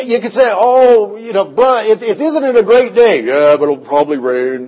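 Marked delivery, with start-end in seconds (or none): 3.2-4.7 put-on gloomy donkey voice, much lower. Imitating a negative man from church who talked like Eeyore, Eeyore voice. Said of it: "He talked like that too".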